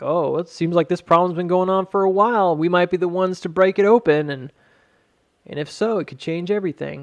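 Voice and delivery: mock silly, goofy-sounding delivery. Retelling how a man announced an investigation, imitating a goofy delivery. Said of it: "he's saying it in a way that's really goofy".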